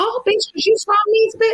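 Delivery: mock very high, furious, blowing-up outburst. Retelling how another castmate reacted: imitating an angry outburst. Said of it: "she blew up".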